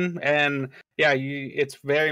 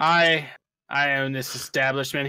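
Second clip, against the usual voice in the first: put-on tipsy, drunk-sounding dwarf character voice. Game master voicing the dwarf owner answering a player, tipsy dwarf owner voice. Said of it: "there's a short dwarf male there, ... He seems a little tipsy for the day".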